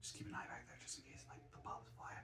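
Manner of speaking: breathy, hushed whisper. Showing comics from a buyer's giveaway on camera, whispering. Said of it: "I don't know why I'm whispering".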